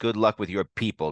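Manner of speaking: ordinary delivery, nothing marked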